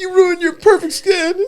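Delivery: put-on tearful voice. Retelling how mom reacted to a tattoo: imitating mom crying. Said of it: "my mom was, like, crying".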